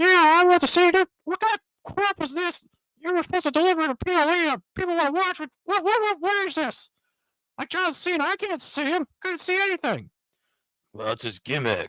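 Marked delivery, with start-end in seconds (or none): 0.0-10.1 very high-pitched cartoon mouse voice. Improvising an imagined scene with Mickey Mouse scolding someone: Mickey Mouse voice. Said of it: "So let's just go with Mickey Mouse".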